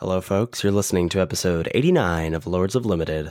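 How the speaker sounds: silky-smooth voice. A podcast co-host, asked to say something for the folks at home, smooth tones. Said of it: "Listen to those smooth tones".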